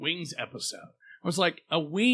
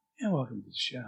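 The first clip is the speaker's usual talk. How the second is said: put-on radio announcer voice, lower; 5 semitones lower, 5 dB quieter than usual. Speaker getting ready to start the show tries out an NPR announcer voice. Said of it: "I could do the NPR".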